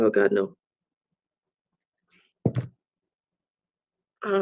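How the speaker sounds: slow, tearful crying, voice breaking into tears. Describing aloud what they are being shown, the speaker starts crying. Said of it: "I'm crying now".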